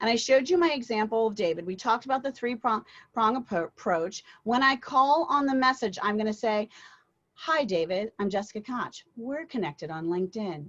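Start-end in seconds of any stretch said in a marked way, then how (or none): 7.4-10.7 stable, steady, unhurried, slow, low, calm tone. Demonstrating a LinkedIn voicemail opener for an audience: slowed down, lowered calm tone. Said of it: "Do you see how I slowed down? I lowered my tone".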